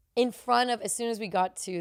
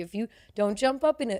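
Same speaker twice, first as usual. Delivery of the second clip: plain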